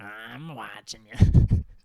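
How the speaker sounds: very loud, belted cartoon character voice. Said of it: "I can do Rise, kind of".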